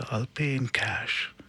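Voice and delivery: soft, very hushed murmur. Telling a story about a lady who came in with photo albums, hushed voice. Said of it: "in a very hushed voice".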